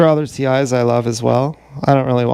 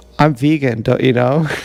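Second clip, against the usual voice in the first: ordinary talk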